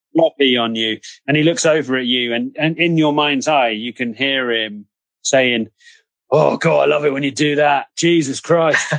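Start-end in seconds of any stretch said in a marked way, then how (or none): 6.3-8.9 put-on voice of a wild dog. Voicing a wild dog enjoying a tickle: dog voice. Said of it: "The dog voice".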